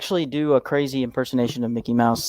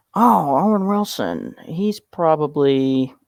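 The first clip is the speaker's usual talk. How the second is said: slow, relaxed drawling put-on voice. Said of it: "With the impression as well".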